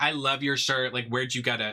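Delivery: put-on hollow, insincere, fake-nice tone. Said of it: "not being genuine at all".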